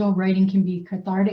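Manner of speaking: normal talking voice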